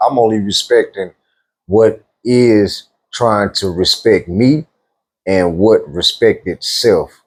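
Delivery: slow, measured, deliberate word-by-word delivery. Answering whether a spouse can dictate what you wear: said slowly. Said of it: "I had to say it slow".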